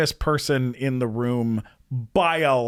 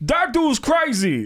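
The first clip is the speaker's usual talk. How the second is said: very high-pitched cartoon rabbit voice; 10 semitones higher than usual. Recalling a one-line rabbit part from a film: rabbit voice like Tracy Morgan. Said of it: "sounded like, uh, a little like Tracy Morgan".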